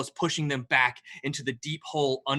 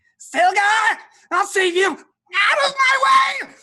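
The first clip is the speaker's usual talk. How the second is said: piercing, very loud, very high, shrill, drawn-out cry; 11 dB louder than usual. Game master voicing a character calling out to stilgar: shrill voice. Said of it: "a shrill voice ring out".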